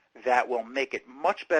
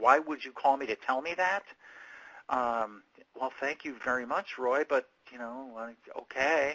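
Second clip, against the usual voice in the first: put-on mildly puzzled, hesitant, unsure tone; 3 dB quieter than usual. Describing how a business answers a customer's call of praise, imitating a puzzled tone. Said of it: "sound a little puzzled".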